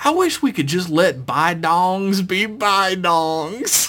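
put-on American Georgia accent. Reading a listener email aloud, as asked: georgia accent. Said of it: "do a Georgia accent again".

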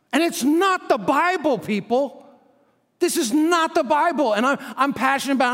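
yelling. Addressing listeners about church leaders, the speaker is yelling. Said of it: "I'm not yelling at you".

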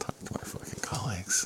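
soft, voiceless whisper under the breath.

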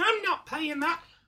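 squeaky little mousy voice, very high pitch. Imitating the person they're talking to, in a tiny mouse voice. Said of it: "you have a tiny mouse voice that's all like".

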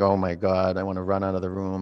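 ordinary delivery

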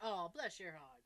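put-on very low, very soft, hushed syrupy sarcasm. Acting out what Southern people say to someone, put-on sarcasm. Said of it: "that is so sarcastic".

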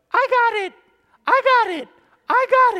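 very high, very loud, shrill yelling. Retelling a pop fly in center field, imitating a guy's high voice. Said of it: "this guy kind of had a high voice".

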